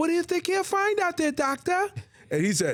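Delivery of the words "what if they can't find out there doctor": very high-pitched character voice. Acting out a Planet of the Apes scene: Zira impression. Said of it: "this is Zera".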